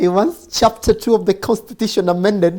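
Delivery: laughing through the words.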